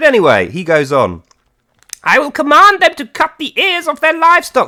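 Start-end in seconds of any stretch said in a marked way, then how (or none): 2.0-4.7 silly, very high voice. Reading a quote of Satan from the verse aloud: silly Satan voice. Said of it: "we have to do them in the silly voice".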